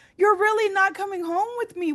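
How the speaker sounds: very high-pitched, weepy, tearful crying voice. Retelling checking in alone at the airport: retelling own crying. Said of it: "I just break down crying".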